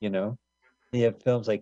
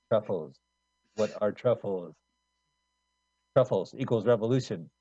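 put-on French film director voice. Show off your own take on the man in a Jean-Luc Godard impression. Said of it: "That's my Jean-Luc Godard impression".

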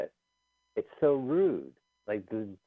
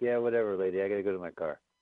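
plain

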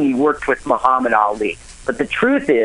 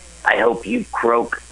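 put-on mutter under breath, slower. Speaker retells what a man said while driving past a neighbor, under his breath. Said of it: "he's under his breath".

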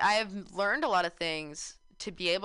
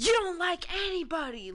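mock, shrill, very high yelling voice; 10 semitones higher than usual. Describing voices heard while half asleep, imitating someone yelling. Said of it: "someone be yelling like".

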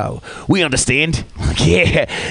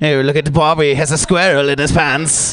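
taunting, teasing put-on British accent. Imagining how a British guy would tease someone, in a mocking British accent. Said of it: "that sounds like a something a British guy would say".

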